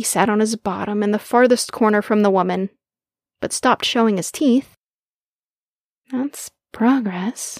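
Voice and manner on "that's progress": muttered, mumbling voice. A woman mutters as the pup in the corner stops showing his teeth. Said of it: "she muttered".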